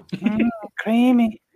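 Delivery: very high, squeaky, falsetto-like voice. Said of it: "You gotta do the voice right".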